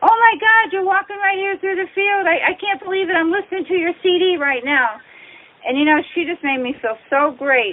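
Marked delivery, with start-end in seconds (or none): 0.0-5.0 acted yelling in a high woman's voice. Retelling how a woman in a car called out to the band: imitating a woman yelling. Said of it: "she starts yelling at us, and she goes".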